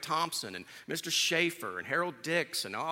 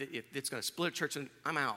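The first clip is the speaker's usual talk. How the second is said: usual speaking voice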